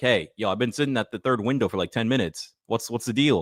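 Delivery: ordinary talk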